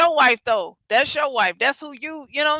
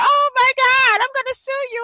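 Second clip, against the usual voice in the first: mock crying, higher pitch; 11 semitones higher than usual. Retelling a video of a slapped woman who starts crying: imitating a woman crying. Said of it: "and she gonna cry".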